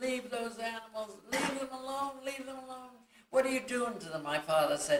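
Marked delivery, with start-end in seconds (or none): 0.0-4.2 very high, hysterical screaming and crying. Recalling herself as a little girl on the porch, retelling screaming and crying. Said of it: "I kept screaming and crying".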